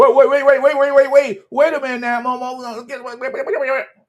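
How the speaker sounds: loud, high, rushed stutter, tripping, words piling up. Imitating Mark Holmes chasing the speaker off his channel: imitating Mark Holmes stuttering. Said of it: "he gonna be stuttering".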